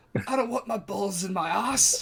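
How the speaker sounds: frightened. Playing a character just threatened by a huge half-orc, answering scared.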